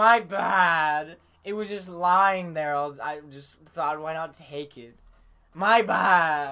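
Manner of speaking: mock sarcastic, irritating voice. Describing a favorite character's annoying way of talking: imitating Karma's annoying sarcastic talk. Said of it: "It's like".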